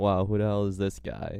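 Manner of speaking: normal talking voice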